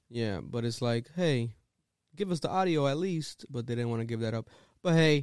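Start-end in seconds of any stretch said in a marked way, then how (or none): none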